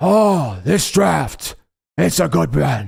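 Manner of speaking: rough, creaky, slow, drawn-out bad film-star voice. Demonstrating your impressions while talking about the draft, piss-poor Al Pacino impression. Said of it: "I do a little bit of a piss poor Al Pacino".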